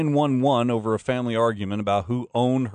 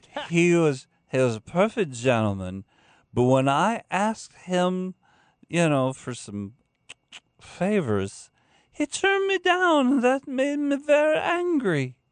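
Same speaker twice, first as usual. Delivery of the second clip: mock drunk woman voice, much higher; 7 semitones higher than usual. Reading a quote from a woman who made false 911 calls, imitating a drunk woman. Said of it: "your imitation of drunk women".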